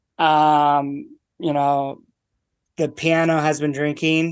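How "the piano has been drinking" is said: usual speaking voice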